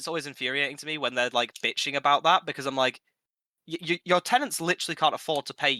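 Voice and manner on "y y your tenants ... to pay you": ordinary delivery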